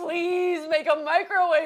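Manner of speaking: desperate high pleading. Retelling what a woman said, imitating someone pleading. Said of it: "She was like pleading to God".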